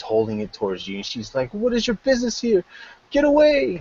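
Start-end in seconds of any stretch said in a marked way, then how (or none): 1.5-3.8 terrified, frightened voice, very high-pitched. Voicing a woman who holds a dagger toward the listener: very, very frightened. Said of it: "very, very frightened".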